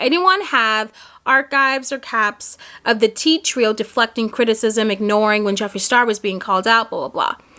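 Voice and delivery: ordinary talk, nothing marked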